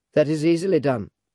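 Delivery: ordinary delivery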